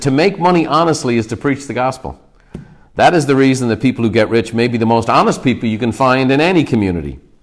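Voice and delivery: ordinary talk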